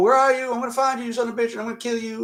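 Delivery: put-on fast Southern US accent. Retelling a movie scene, speaker voices the officer hunting Elmer in a Southern accent. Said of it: "He is Southern, so I'm not like I'm not ... just using the Southern accent".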